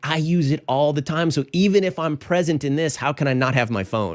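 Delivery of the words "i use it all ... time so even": ordinary delivery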